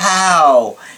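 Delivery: how drawn out long as hooow. Retelling how a client said one word: imitating a client's drawn-out how. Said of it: "that's how he would say it".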